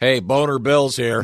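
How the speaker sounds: high-pitched, called-out counter clerk voice. Imitating a pharmacy lady announcing a customer: imitating a pharmacy lady. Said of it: "the pharmacy lady go".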